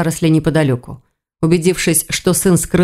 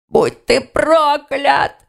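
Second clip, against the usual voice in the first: high, strangled, choked wheeze, fighting for air; 8 semitones higher than usual. Reading a story, a young man held by the throat curses his attacker: wheezing while being choked. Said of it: "засипел Тигон".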